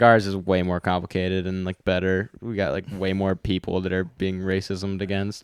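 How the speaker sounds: normal talking voice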